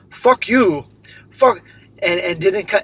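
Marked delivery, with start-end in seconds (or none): 0.1-1.6 put-on broken English, higher voice. Retelling what a football hooligan said: imitating broken English. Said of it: "he said in broken English".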